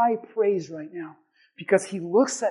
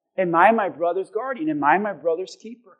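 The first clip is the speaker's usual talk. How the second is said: ordinary delivery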